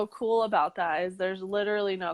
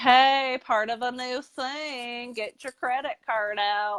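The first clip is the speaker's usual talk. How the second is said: put-on playful sarcastic tone, higher pitch; 4 semitones higher than usual. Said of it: "so I made it funny".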